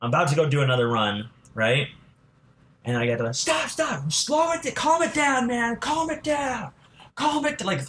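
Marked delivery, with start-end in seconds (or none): 3.3-7.6 mock very high, slow, drawn-out group shouting. Retelling a group on the road shouting at the speaker: imitating people shouting. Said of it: "all five of them shouting this at me".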